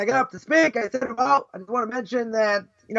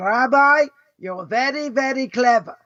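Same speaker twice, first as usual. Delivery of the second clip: put-on very thick Hungarian accent, slow. Retelling an older woman who approached the speaker after a talk: heavy Hungarian accent. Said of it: "with a very, very heavy Hungarian accent".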